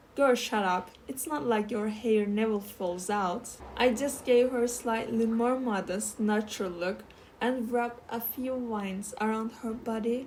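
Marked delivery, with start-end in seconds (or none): none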